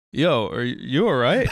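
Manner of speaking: let-down, disappointed voice. Retelling how the other speaker checked in during the drive: imitating Gastor's parentally disappointed tone. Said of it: "That tone, just those few words, that's parental disappointment".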